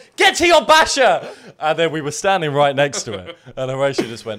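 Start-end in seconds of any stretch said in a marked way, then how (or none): 0.2-1.3 very high, very loud, shrieking scream. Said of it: "he shouted".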